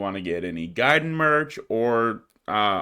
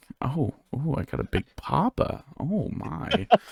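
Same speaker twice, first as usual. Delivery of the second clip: creaky vocal fry voice, crackling in the throat; 4 semitones higher, 4 dB quieter than usual. Reacting after someone says Big Papa during the thank-yous, in vocal fry. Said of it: "A vocal fry".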